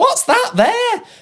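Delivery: silly, clueless, high, slow, drawn-out dopey voice.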